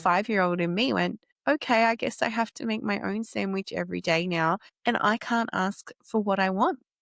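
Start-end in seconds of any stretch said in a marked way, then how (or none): none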